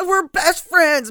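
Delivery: loud high scream. Retelling a film scene where one character yells at Patch: imitating someone screaming. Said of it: "screaming at Patch".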